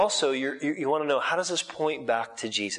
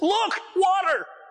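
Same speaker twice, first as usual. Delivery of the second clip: put-on very high, enthusiastic, excited outburst; 4 dB louder than usual. Showing what the verse literally means in the original: enthusiastic exclamation. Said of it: "I say it with enthusiasm".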